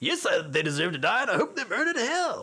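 terrible, very high voice swooping all around. Quoting a courtroom film line in a terrible Samuel L. Jackson impersonation. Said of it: "That's my terrible Samuel L. Jackson impersonation".

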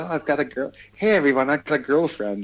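nerdy, showing-off little-guy voice. Describing how two players' tweets felt, imitating a little nerd. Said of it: "It's just like this little nerd".

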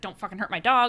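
ordinary talk, nothing marked

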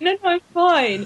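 acted mildly frightened tone. Retelling how tourists answered offers of help: imitating a slightly scared reply. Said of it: "in a slightly scared way".

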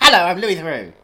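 loud, confident, bold voice. Imitating a documentary presenter walking up to people: confident Louis Theroux impression. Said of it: "He walks up to people and says".

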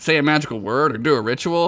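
plain reading voice

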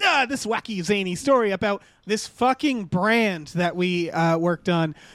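normal talking voice

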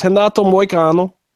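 Portuguese-accented pronunciation. Saying a fighter's name to show off a Portuguese accent. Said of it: "How's my Portuguese accent".

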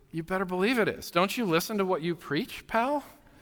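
mock earnest, dead serious, no joking at all. Retelling a spouse's reply on a beach walk: imitating a dead serious reply. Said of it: "serious as can be".

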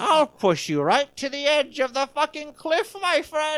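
very high-pitched, joking, leprechaun-style Irish accent. Joking with a friend, one speaker answers in a joking Irish accent. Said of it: "you sounded Irish".

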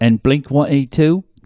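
attempted, put-on English accent. Joking about celebrities at a festival, attempted english accent. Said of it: "so cute when you try and do an English accent".

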